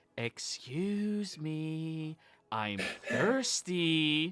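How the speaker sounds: ominous whisper. Voicing a child character in a scene: ominous whisper. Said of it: "Gwendolyn just whispering out ominously".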